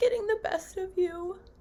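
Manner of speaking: high, tearful, emotional crying.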